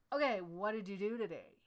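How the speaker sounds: suspicious accusatory tone. Speaker showing how not to ask about someone's work, suspicious questioning tone. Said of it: "not like, ... As if you're waiting for them to fail".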